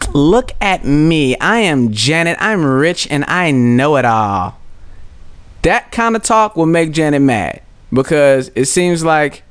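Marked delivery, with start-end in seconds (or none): 0.1-4.6 slow, derisive, mocking drawl. Showing how mocking and mirroring someone sounds, mocking imitation of Janet. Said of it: "mocking and mirroring people".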